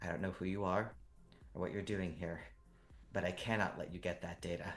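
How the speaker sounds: low, hushed sultry voice, very softly spoken. In a role-play scene, a woman speaks to the listener's character: low, sultry voice. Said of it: "she's speaking to you in a low, sultry voice".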